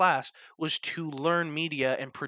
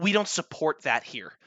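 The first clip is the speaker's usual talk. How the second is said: put-on, very angry, pissed-off scolding tone; 3 dB louder than usual. Retelling a reaction to a gorilla mask during a recording: imitating someone angry. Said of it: "she gets super pissed".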